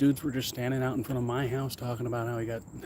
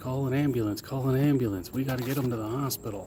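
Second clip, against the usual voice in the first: ordinary talk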